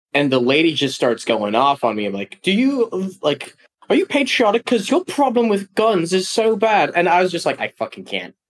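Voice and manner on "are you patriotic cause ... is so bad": slow, high-pitched put-on British accent. Retelling a UK tourist lady going off on them, in a British accent. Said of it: "a great accent".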